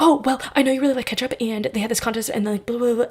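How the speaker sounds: fast, rattled-off, nervous babble.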